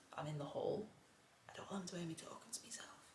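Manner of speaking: very quiet, hushed whisper under the breath. Talking to a camera in the hall so the neighbours won't hear, whispering. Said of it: "I'm whispering because there's neighbours".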